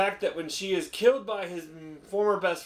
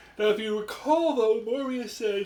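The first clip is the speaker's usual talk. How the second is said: speaking mid-yawn, higher pitch; 5 semitones higher than usual. Giving a film report to a listener, yawning while talking. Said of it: "Stop yawning".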